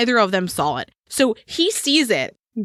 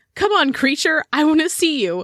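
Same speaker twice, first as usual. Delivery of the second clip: put-on high, rowdy, screaming teenage-boy shout; 7 semitones higher than usual. Retelling how the boys yelled out the car window: imitating boys screaming. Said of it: "start screaming".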